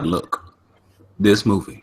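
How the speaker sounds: weighty, solemn, dead-serious tone. Imitating the other speaker's movie warning: imitating a serious tone. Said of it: "He got so serious. He's like".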